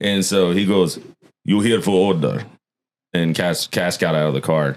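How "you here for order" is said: put-on heavy, laid-on Russian accent. Retelling what a worker outside Little Caesars asked: imitating a heavy accent. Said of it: "heavy accent".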